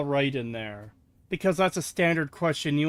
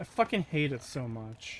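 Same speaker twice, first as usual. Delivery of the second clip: normal talking voice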